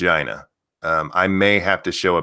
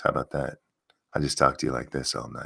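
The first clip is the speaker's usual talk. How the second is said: very low, deep, soft, seductive voice; 7 semitones lower, 9 dB quieter than usual. Speaker entertains the audience while others may not join, in a sexy voice. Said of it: "my, uh, sexy voice".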